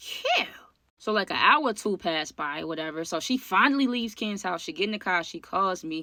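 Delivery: plain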